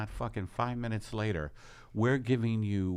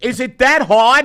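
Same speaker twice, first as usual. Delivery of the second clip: put-on high, loud New York accent. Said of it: "That, that's my New York accent".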